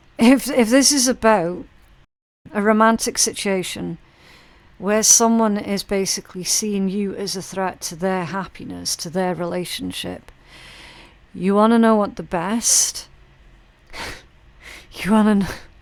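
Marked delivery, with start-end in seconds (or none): 11.3-15.6 talking while laughing, trying not to laugh. Starting to give advice about a jealous rival, laughing while talking. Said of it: "I don't know if I can get this out without laughing".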